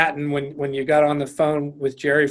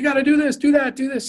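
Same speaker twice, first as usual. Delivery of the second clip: put-on very high, cheering, encouraging barked yell; 11 semitones higher than usual. Recalling a man on the sideline barking out orders, retelling encouraging yelled orders. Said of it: "He was yelling like".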